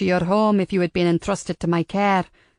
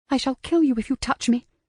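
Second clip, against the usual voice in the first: high, menacing hiss under the breath; 6 semitones higher than usual. A woman in a story answers a man, hissed under her breath. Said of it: "she hissed under her breath".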